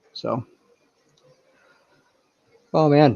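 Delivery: spoken through a yawn. Wrapping up a stream and thanking viewers, speaking through a yawn. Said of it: "oh I'm yawning".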